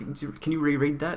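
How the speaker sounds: high, mock puzzled, baffled voice.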